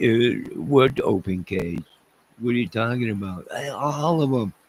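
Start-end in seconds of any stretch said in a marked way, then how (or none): 0.0-3.5 put-on dismissive, mocking, laughing scoff. Retelling how listeners laughed at a warning: imitating a mocking reply. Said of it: "And you laugh at me".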